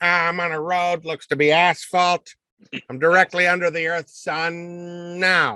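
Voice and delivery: "sun" stretched out and kept high-pitched. Quoting a cartoon police chief's radio call: Chief Wiggum voice. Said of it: "Chief Wiggum, he's like".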